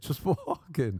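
high-pitched, put-on laugh-filled speech. Retelling a cousin's story about his knee, retelling laughing while talking. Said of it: "I couldn't stop laughing".

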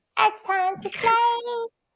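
put-on very high, drawn-out, playful child voice. Demonstrating a voice just discussed, in a child's playtime voice. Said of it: "it's a child's playtime voice".

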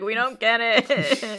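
high, very slow, drawn-out blubbering crying wail. Retelling a scene from Skeleton Crew: imitating crying. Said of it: "all, like, crying, like".

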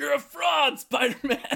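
very loud, very high, rough, raspy yell. Giving a hint by quoting a movie character as he says it, retelling a yell. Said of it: "he yells out a window".

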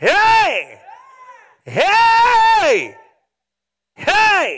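loud, high, stretched-out shouted "heys". Showing listeners how people praise when it's going good: shouting. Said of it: "you sure can shout".

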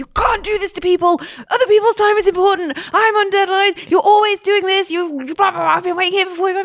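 very high-pitched screaming tirade. Retelling screaming at someone who kept them waiting forty-five minutes: retelling own scream. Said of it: "And I just screamed at her".

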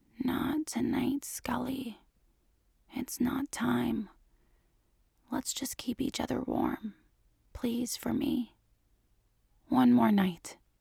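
hushed, low, soft begging voice. Reading a story aloud, a character begs a partner to hold on: low pleading voice. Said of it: "voice is low and pleading".

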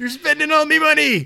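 very loud, very high, belted cartoon sailor voice. On a show, do the impression you do every episode, a Mr. Krabs impression. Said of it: "do your Famous Mr. Krabs impression".

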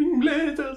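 shaky, wobbling, very high trembling quaver. Imitating how someone says a phrase, shaky voice. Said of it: "He says it with like a shaky voice".

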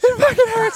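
very high, sniveling, whiny pained whimper. Retelling a joke about a friend dying: imitating someone whining in pain. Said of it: "like a little bitch".

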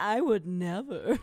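loud, heavy, laid-on sarcastic tone. Imitating the other speaker's line back to them: imitating a sarcastic tone. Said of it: "you literally just sounded so sarcastic".

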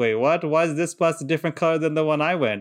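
usual speaking voice

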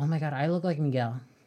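put-on excited child voice. Imagining a child seeing a Coco character who looks like them: imitating an excited child. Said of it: "Imagine a child like".

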